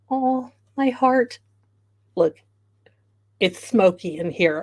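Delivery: emotional, choked-up, teary voice close to tears. Reacting to a thank-you message, tearing up. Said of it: "I am not tearing up".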